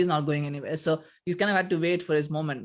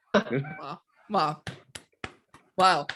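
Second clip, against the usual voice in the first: heavily sarcastic fake amazement, repeated wow. Reacting to another speaker's three-nil prediction: sarcastic wow. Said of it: "I'm sarcastically clapping".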